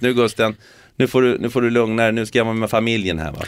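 normal talking voice

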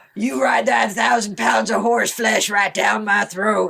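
rough, gravelly, ground-out delivery. Quoting a movie line from the dragon film: Matthew McConaughey gravelly voice. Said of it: "Matthew McConaughey is doing this gravelly voice thing".

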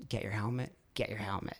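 hushed whisper. Retelling a voice heard in the left ear: whispering. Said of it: "I just heard this whisper in my left ear".

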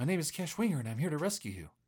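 airy, breathy voice. Playing a rescuer who introduces themself to a captive: breathy voice. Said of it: "Very breathy".

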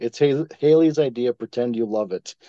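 plain

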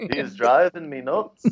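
put-on Liverpool accent. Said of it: "It could be a Liverpudlian".

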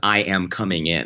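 ordinary talk

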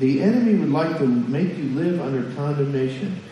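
ordinary talk

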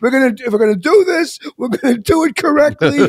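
mock hollering. Retelling how someone scolded him at a bowling party: imitating someone yelling. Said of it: "he's yelling at me".

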